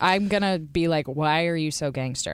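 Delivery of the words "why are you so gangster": ordinary talk, nothing marked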